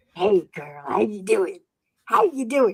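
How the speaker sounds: creepy, scary ghoul voice. Retelling what a man playing the Beetlejuice character said, Beetlejuice impression. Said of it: "he sounded just like him".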